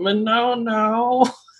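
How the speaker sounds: very high, stretched-out puppet voice. Recalling how players would say a word in an Elmo voice. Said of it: "they would do a Elmo voice and just be like".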